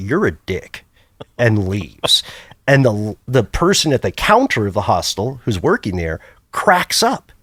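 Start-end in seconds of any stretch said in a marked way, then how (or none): 0.0-0.8 put-on smooth, flawless, native-sounding American English accent. Retelling what a hostel guest said before leaving: imitating a flawless American accent. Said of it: "in a flawless American accent".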